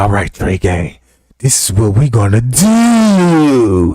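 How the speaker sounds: put-on whisper. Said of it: "they got to whisper to you".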